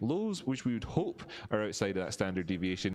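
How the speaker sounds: wide, lilting, hopeful stress on "hope".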